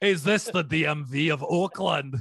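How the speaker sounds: put-on Scottish accent. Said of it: "I'll do it in a Scottish accent".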